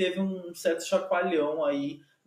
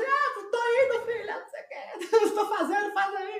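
mock very high-pitched yelling. Retelling what a contestant yelled with water in his mouth: imitating someone shouting. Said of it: "ele gritava assim".

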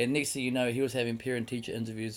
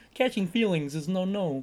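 put-on puppet frog voice; 7 semitones higher, 4 dB louder than usual. Joking about running away from feelings, after another speaker suggests: Kermit the Frog voice. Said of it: "Kermit the Frog".

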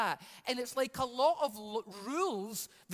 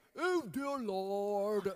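put-on weird pious prayer voice, drawn-out "Lord"; 3 semitones lower than usual. Mocking how religious people talk to god; mock weird prayer voice. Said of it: "one that talks in a weird way to God".

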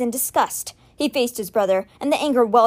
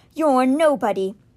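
plain

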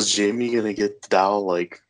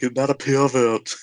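the word "pervert" chewed up and pitched up; 5 semitones higher than usual. Quoting a favorite movie line, mangling pervert: Arnold Schwarzenegger impression. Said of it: "how he slaughters the word pervert".

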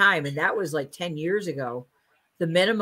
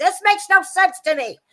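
very high, loud, complaining scream; 7 dB louder than usual. Recounting watching a football game, retelling their own screaming. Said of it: "I was screaming, I was like".

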